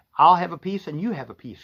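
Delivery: ordinary delivery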